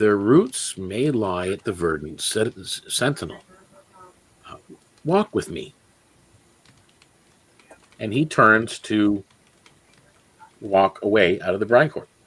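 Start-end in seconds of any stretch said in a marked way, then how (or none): 0.0-5.8 very quiet, low, confiding undertone. He leans in close to Tidebound, who stands with the group, and speaks very quietly, in a low voice. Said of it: "very quietly, in a low voice".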